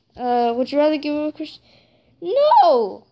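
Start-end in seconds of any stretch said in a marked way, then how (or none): 2.2-2.9 voice breaking halfway, high crack on "no". Answering a would-you-rather question with a shout: voice cracking halfway. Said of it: "My voice just went so weird right there".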